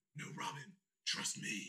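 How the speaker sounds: whispered, hushed put-on character voice. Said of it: "the idea of him just going".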